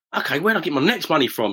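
ordinary talk

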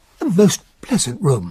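plain

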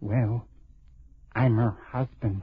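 low, hushed, secretive half-whisper. A man tells a woman he has just met that he is her husband, half-whispering. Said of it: "Why are you whispering?".

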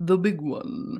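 put-on broadcaster's radio announcing voice. Echoing the intro to the fourth question: put-on radio voice. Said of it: "My radio voice".

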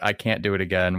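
ordinary talk

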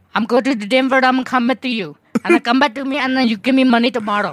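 high fake Indian accent. Showing friends how people talk in an Indian accent: put-on Indian accent. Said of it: "whenever you talk Indian".

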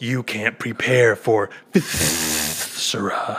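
very slow, drawn-out, aggressive rolled-tongue delivery. Imagining how the wrestler Viscera would talk: mock-aggressive Viscera voice, rolled tongue. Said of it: "like rolling his tongue".

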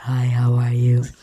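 really low, deep voice from bottom of range. Imitating a woman's voice on the show, doing a really low voice. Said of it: "I have a really low voice".

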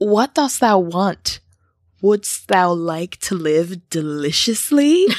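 sexy, tempting goat voice, every word alluring. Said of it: "he got a little bit of a sexy voice for a goat".

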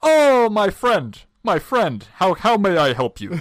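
put-on Middle Eastern accented voice. A stranger answers someone asking him for help, Middle Eastern accent. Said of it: "I am going to do the accent here because I think I do a pretty believable".

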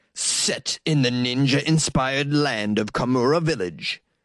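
slow, drawn-out video game announcer voice. Reading a game description aloud, in a video game voice. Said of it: "I'm going to read this game description in my video game voice".

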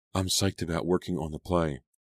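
plain reading voice

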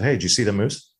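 plain

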